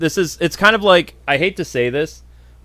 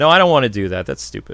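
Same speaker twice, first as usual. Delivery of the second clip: ordinary delivery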